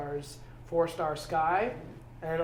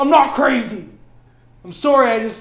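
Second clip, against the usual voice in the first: voice raised and pitched up in frustration; 8 semitones higher, 18 dB louder than usual. Speaking on tape about his years of effort, in a raised voice. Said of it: "I'm raising my voice".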